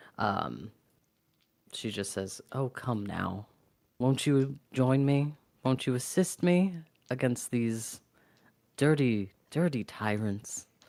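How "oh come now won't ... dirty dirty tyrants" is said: sweet coaxing character voice. Sabine tries to charm a player character into joining her, sweet and coaxing. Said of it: "with as sweet a face as she can muster".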